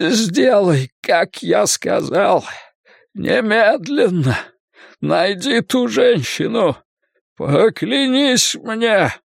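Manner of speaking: pained, strained, very slow gasping shout. A burned man gives a boy an order, trying to shout, gasping in pain. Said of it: "попытался прикрикнуть Картер, задыхаясь от боли".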